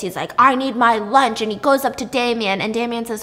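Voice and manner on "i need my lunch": put-on angry man voice, louder. Retelling a show scene where a player gets angry: imitating an angry demand. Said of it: "this guy starts getting pissed".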